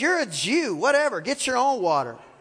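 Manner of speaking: put-on sarcasm, dismissive tone. A storyteller retells a woman at a well refusing a man's request: mock-sarcastic brush-off. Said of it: "I believe she's being sarcastic".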